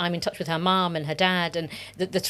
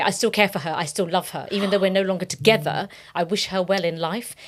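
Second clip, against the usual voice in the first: normal talking voice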